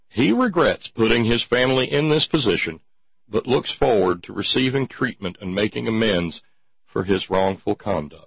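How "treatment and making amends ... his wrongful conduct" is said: ordinary talk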